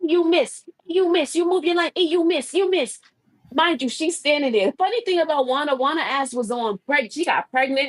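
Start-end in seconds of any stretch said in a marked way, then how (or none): 0.0-3.0 put-on Panamanian woman's Spanish accent, pitched up. Retelling what Juana kept calling out, in Juana's Spanish accent. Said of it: "She had a Spanish accent".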